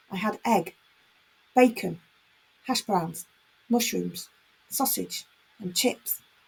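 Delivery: short rhythmic pause after each listed item. Showing how commas mark pauses in a list, pausing at each comma. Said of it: "you can hear there's almost a pause when we use it".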